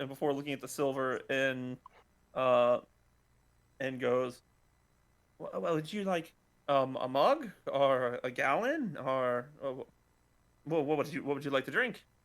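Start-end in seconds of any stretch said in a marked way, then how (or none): 5.4-12.0 startled, taken-aback voice. Voicing a barmaiden taken aback by an order: taken aback barmaiden. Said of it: "the barmaiden looks taken aback".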